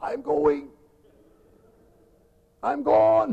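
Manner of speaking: breathless, squashed, creaky high voice. Describing someone sitting on you, the speaker acts out your voice: put-on voice. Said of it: "You say with a voice something like this".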